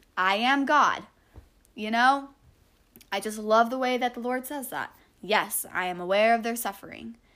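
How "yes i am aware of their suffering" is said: openly sarcastic, dry tone. Re-quoting a line attributed to the Lord, sarcastic quoting tone. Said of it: "sarcastic like I'm saying it".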